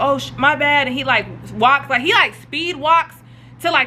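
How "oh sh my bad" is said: plain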